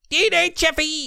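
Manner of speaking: very high-pitched put-on Australian accent. Imitating an actor from robot movies, put-on Australian accent. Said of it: "he's got that weird Australian accent".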